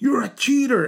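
mock very high, shrieking, screaming yell. Telling a story about a man at a competition, imitating someone screaming. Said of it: "he kept screaming".

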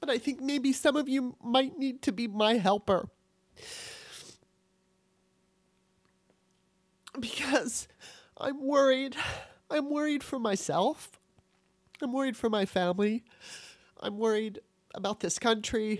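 crying, choked up. Speaking to the audience after apologizing for crying, crying, choked up. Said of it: "I'm sorry for crying".

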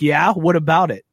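put-on defensive tone. Mimicking how another speaker answered a question: imitating a defensive reply. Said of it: "that was a defensive yeah".

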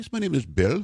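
heavy put-on Indian accent. Retelling an unexpected phone call from a stranger, in a very thick indian accent. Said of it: "very thick Indian accent".

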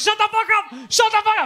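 shrill, high, loud, furious repeated yelling. Telling how he yelled at a man on the phone who wouldn't hang up, retelling a yell. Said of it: "I was yelling at him".

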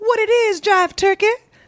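retro seventies jive slang, pitched way up. Retelling how own russian sounds, like seventies slang: imitating own seventies jive talk. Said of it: "I speak like our equivalent of the late seventies".

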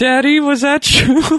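put-on very high, small child's voice. Retelling words overheard from a kid in a bathroom: imitating a kid's voice. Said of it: "You hear a kid's voice saying".

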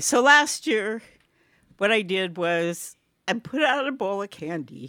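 slow, choked-up, teary laughing that sounds like crying. Starting a story while another speaker asks if they are crying: choked-up laughing. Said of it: "Are you crying?".

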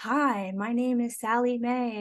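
slow, fake, announcer-style radio voice. Showing how people who have never recorded start to talk: put-on radio voice. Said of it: "what I call, uh, radio voice".

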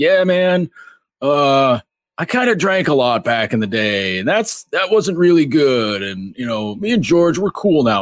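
slow, high, laid-back hippie voice. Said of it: "talking like a hippie".

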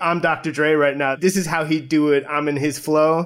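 ordinary delivery

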